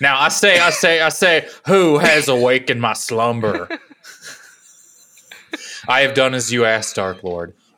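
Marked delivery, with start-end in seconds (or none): 1.7-3.7 louder put-on Kentucky accent. In a comedy bit, playing a figure roused from slumber: McConnell Kentucky accent impression. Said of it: "McConnell, all Kentucky and shit".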